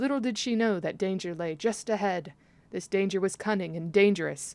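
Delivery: ordinary delivery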